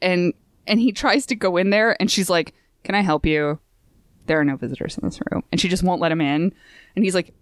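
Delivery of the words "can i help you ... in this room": put-on frosty, unwelcoming, ice cold tone. Retelling a manga scene where the nurse turns a visitor away: imitating a super cold nurse. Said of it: "she's just, like, super cold".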